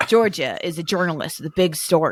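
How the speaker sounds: put-on American accent, reading aloud. Reading a story description aloud, in an American accent. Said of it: "I'm going to read it in an American accent".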